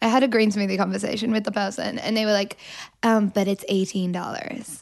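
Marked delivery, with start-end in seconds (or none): 3.0-4.8 put-on American accent. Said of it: "You just did an American accent".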